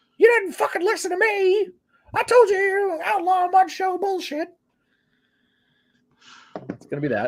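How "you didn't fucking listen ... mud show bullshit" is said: mock-angry cartoon-mouse voice, much higher. Predicting Corny's rant when this gets back to him: mock-angry Jim Cornette impression. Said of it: "sound like an angry Mickey Mouse".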